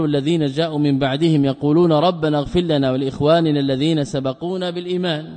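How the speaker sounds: plain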